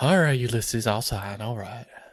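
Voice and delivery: put-on understated, easygoing Virginia accent. Imagining the surrender to Ulysses, the signer answers in a quiet Virginia accent. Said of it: "In his nice, like, quiet little Virginia accent".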